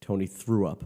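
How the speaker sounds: ordinary delivery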